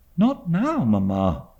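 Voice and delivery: hushed, low, pleading murmur. A daughter answers her mother, in a low pleading tone. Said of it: "she pleaded in a low tone".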